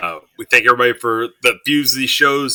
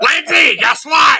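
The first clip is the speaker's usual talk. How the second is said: very high, shrill, loud shriek; 4 dB louder than usual. Acting out knocking on Lindsay's door at midnight on Friday, in your best Gilbert Gottfried voice. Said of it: "my best Gilbert Gottfried voice".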